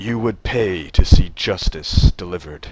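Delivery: booming, very loud, scornful sneering tone. Voicing a dragonborn on a crate looking down at another character, sneering. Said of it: "he looks down at Sorrow with a sneer".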